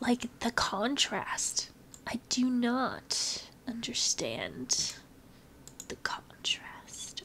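puzzled, slow whispering.

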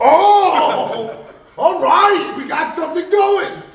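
high-pitched, loud, excited cheering shout. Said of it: "And I'm like".

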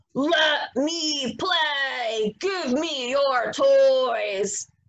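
mean, nasty, bossy, angry wolf voice. Narrator reads the greedy wolf at the house of bricks: mean, angry wolf voice. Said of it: "talking in his mean, angry voice".

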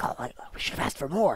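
hushed whisper. Onlookers see how heavy the party's coin sacks are, whispering. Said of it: "they all start whispering like".

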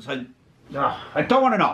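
exasperated, fed-up angry outburst with swooping pitch. Refusing to hear more about a prank: angry. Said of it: "Why are you getting angry for?".

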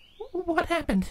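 trembling, shaky voice, very high-pitched. Narrator reads Twilight asking Spike what happened; asking shakily. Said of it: "Twilight asked shakily".

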